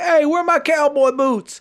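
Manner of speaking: play-acted very high holler. Retelling someone yelling a question to his girl: imitating someone yelling. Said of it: "he's yelling at his girl".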